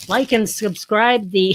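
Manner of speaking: loud, squeaky voice like after inhaling helium. Streamer who just breathed from a balloon, speaking in a helium voice. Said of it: "What should I say with the helium voice?".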